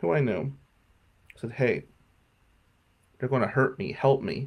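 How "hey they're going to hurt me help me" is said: secretive, pleading stage whisper, said as an aside. Retelling asking the bus driver for help: imitating a half-whisper. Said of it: "I whispered to the bus driver".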